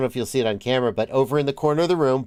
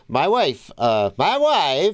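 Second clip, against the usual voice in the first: slow, swooping, drawn-out put-on Eastern European accent; 3 semitones higher than usual. A speaker mentions his wife, slipping into a Borat voice. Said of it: "couldn't resist the Borat voice".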